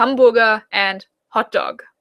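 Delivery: German-accented English, plain delivery. Showing how Germans say hamburger and hot dog: German accent. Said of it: "So just German accent".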